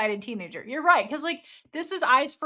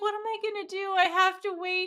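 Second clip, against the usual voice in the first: high, pining, lovestruck, lovesick whine; 9 semitones higher than usual. Retelling a scene where a lovesick character waits for someone to come back; imitating her whine. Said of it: "she then whines".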